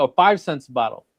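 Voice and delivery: re-enacted shouting. Speaker retells what a woman yelled at him: retelling her yell. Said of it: "So she's yelling".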